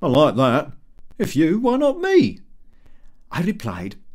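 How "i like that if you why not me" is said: loud, high, coarse, overfamiliar bantering voice. The narrator voices the ironmonger answering him, with a loud, coarse laugh. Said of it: "with a loud, coarse laugh, / He said, / we're too old for this game. / our ironmonger. / in his loud voice, / in the most familiar way".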